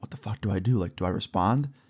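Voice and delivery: frightened, scared, hushed half-whisper. Retelling being scared on the stairs: retelling a half-whisper. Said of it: "And I whisper".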